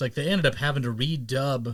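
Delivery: ordinary delivery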